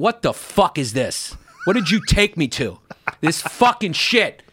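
angry cursing rant with swooping pitch. Retelling a father cursing during a movie: imitating dad cursing angrily. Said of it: "then he starts cursing in the movie theater".

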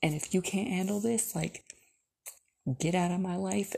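mock fed-up, heated, angry tone. Retelling a fight with him that turned into more anger: retelling angry words. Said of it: "into even more anger and me saying".

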